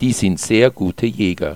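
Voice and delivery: ordinary talk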